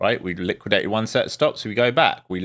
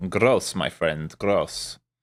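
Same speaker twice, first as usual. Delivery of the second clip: low, laid-on put-on French accent; 4 semitones lower than usual. Speaker reacting while looking at orders, in a put-on french accent. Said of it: "My French accent".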